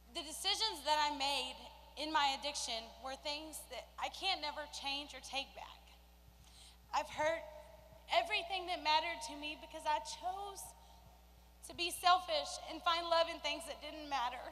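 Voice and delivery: on the verge of crying, voice breaking. Speaking about their past addiction, off the prepared paper, voice breaking, near tears. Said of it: "I'm sorry, I'm gonna cry".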